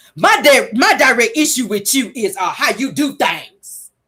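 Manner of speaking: slow, nasty, confrontational drawl.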